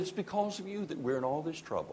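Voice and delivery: hushed, quiet, quick, rattled-off sarcastic jab. Retelling a remark the speaker made to a man who laughed, sarcastic. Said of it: "He knew I was being sarcastic".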